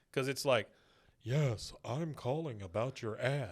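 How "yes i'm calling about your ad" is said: slow, breathy, out-loud whisper. Retelling a cartoon scene, voicing Hank's fake disguised voice: imitating Hank's breathy whisper. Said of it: "kind of out loud whispering".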